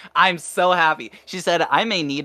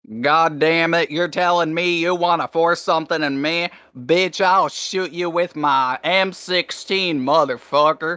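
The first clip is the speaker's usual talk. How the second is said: bad, put-on Southern accent. Speaker announces a shitty Southern accent, then voices an imagined threat in it. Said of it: "I'm gonna do a shitty Southern accent".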